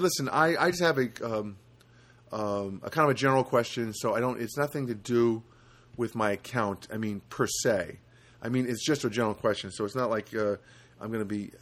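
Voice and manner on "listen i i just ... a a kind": usual speaking voice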